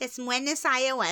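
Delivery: small, little voice. Retelling how a mother drilled state capitals, imitating her little voice. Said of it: "She did this little, like, voice like that".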